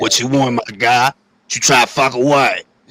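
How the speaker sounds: smoke-worn, man-like raspy voice. Imitating Bronx women who sound like heavy smokers: imitating a raspy smoker's voice. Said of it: "bitches sound like Teofimo Father in the Bronx".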